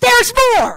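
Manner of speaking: shrill, very loud, high-pitched shout. Retelling standing up in his living room, yelling at the TV: retelling a yell. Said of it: "I'm yelling at the T V".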